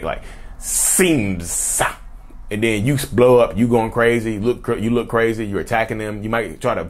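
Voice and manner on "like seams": hissing, snake-like s, lower pitch. Speaker demonstrating how to enunciate an s, hissing snake-like s. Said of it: "the extra hiss on the s like a snake".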